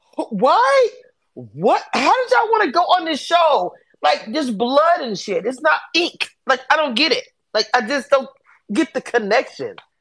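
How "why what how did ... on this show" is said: mock baffled shouting, high and swooping. Recounting watching a show, the speaker reenacts yelling at the iPad. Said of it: "I'm like yelling at the iPad".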